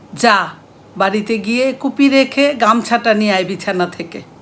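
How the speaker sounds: loud, sharp, barked scolding tone.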